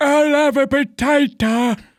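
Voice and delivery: put-on very high, very slow, frail old man voice. Retelling a video, acting an old man near death ordering food: imitating a frail old man. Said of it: "almost on death's door".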